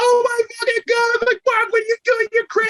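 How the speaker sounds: very high-pitched, mad, angry exclamation. Retelling how a friend reacted to a fight: imitating someone mad. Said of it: "it was so mad at me".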